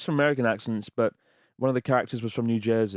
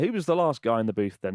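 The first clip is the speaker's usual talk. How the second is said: ordinary talk, nothing marked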